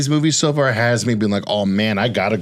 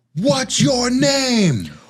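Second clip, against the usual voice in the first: screaming, pitched higher; 13 semitones higher than usual. Retelling a line a movie character keeps saying: imitating someone screaming. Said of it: "she keeps screaming".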